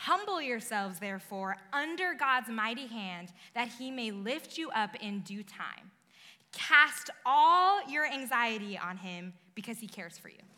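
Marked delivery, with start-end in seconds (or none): none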